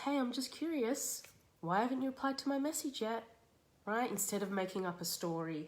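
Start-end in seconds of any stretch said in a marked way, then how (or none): 0.0-3.2 genuinely curious, light, pitched-up voice. Showing the curious alternative to fueling things, genuinely curious. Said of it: "being concerned or being curious".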